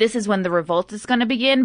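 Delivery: ordinary delivery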